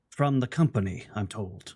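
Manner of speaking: whispered android voice. Narrating, the speaker voices the ship's android Gray placing a device: Gray's android whisper. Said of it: "he whispers".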